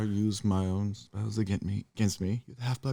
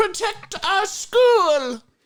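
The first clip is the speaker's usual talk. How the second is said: put-on upset teacher voice, higher and louder; 6 dB louder than usual. Doing Professor McGonagall upset: upset Professor McGonagall voice. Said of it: "She's upset".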